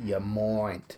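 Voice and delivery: put-on broad, strong Australian accent. Retelling an actor's slip into his accent: imitating Cody Fern's Australian accent. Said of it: "he slipped up".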